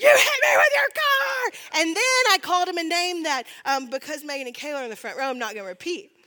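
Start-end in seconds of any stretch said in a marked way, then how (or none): 0.0-1.8 shrill, loud, high, booming, stretched-out drawn-out yell. Retelling being hit by a car, imitating own yelling. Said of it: "I just start yelling".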